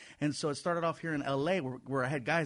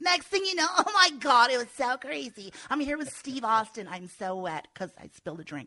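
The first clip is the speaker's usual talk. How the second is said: put-on girly voice, higher and louder; 10 semitones higher, 6 dB louder than usual. Showing how talking in the girl voice sounds: girl voice. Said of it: "I started doing the whole girl voice".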